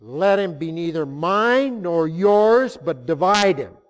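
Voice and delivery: cold, heartless, high, loud, slow delivery.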